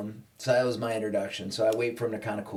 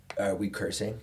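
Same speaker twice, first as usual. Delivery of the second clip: ordinary talk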